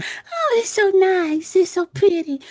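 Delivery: very high, very slow gushing voice. Retelling what people in safari trucks said among lions: imitating tourists on safari. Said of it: "all these people sitting there ... going".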